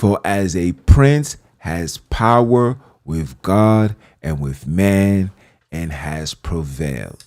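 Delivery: reading nice and slow. Reading a bible verse aloud, nice and slow. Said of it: "Let me read it nice and slow".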